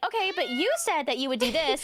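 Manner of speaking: heated, accusing arguing with pitch climbing. Retelling how their arguments got heated, mock-heated arguing, higher pitched. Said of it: "the higher pitched our voice became".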